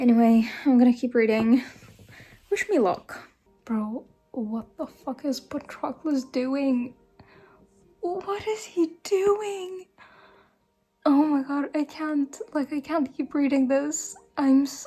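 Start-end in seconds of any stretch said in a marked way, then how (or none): 3.6-14.9 panicked, terrified, stressed outburst, words tumbling out. Reacting to what Patroclus is doing while reading a book: terrified and stressed. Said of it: "I'm terrified".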